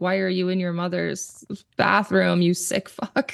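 ordinary talk

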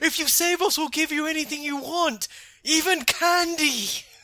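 mock very high, shouted yell. Describing a scene, acting out what Gabumon yells: retelling Gabumon's yell. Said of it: "Gabumon yells".

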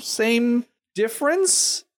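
questioning rise, end going up on "difference". Comparing two groups in a discussion: upward questioning inflection. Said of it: "I said with an upward inflection to make it sound like a question".

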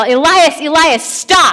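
acted, urgent high-pitched yelling. Picturing their child about to run into the road, acting out a yell. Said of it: "and I yell".

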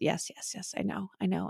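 hushed, quiet, agreeing tone.

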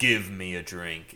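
deep, low, commanding, authoritative voice. Speaker explains how bar patrons order a drink, deep commanding voice. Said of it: "in this like deep commanding voice".

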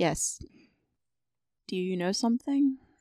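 speaking low, quiet and hushed. A player's character answers a tiefling who mentioned his brothers: lowered voice. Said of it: "I lower my voice and say".

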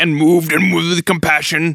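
put-on caveman voice. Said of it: "It sounds like a caveman".

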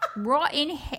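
put-on slipping into a British accent, line cut off. Trying a stretched-out "rot in hell" impression: imitation that came out british. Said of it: "I sound British".

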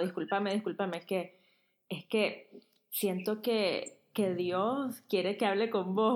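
ordinary talk, nothing marked

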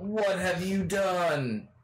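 very high furious yell, drawn out. Playing a character who confronts someone inside an office: yelling in anger. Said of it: "I'm gonna yell".

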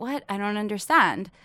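ordinary talk

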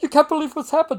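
really high-pitched, very loud exclamation. Retelling what a friend said after running over: imitating someone talking high. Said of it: "talking real high".

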